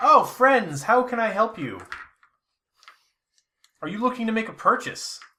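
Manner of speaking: high-pitched droid character voice. A game master voices a protocol droid approaching the players, protocol droid voice. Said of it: "a protocol droid who's got like this".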